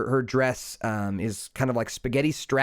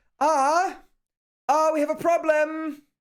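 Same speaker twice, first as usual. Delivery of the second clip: flustered vampire voice, higher pitch. Voicing a flustered vampire manager knocking at the door: flustered Esmeralda voice. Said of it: "she looks flustered".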